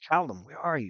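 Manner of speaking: calling out in a wondering, searching way. Voicing an elf searching in the fog: calling out. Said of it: "she's calling out".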